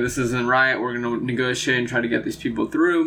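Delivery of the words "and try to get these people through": normal talking voice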